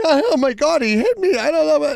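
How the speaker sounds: put-on, very high-pitched screaming cry. Retelling a lady screaming into her phone: imitating someone screaming. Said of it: "just fucking screaming into the phone".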